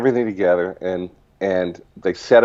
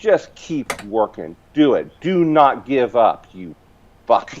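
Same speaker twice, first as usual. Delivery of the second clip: mock harsh scolding, higher; 4 semitones higher than usual. Retelling an inner voice that scolded him to get to work: retelling an inner voice berating him. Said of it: "just reaming me".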